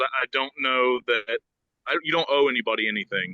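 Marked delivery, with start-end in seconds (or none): none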